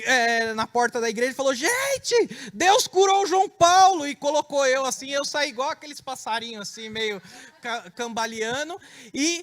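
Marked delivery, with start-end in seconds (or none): 1.5-4.1 very high, loud, drawn-out yelled shout. Retelling the mother arriving at the church door: imitating mother shouting. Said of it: "uma mãe chegar gritando".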